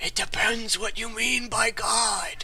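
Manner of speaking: soft, hushed whisper meant for one listener. In a tabletop game scene, speaking only for one other character to hear: whispering. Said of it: "he whispers just so Joseph can hear".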